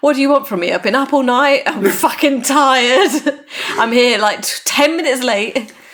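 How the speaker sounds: full-on, proper ranting tirade. Retelling a character's line at the end of a car chase: imitating a Harry-style rant. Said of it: "a proper Harry style rant".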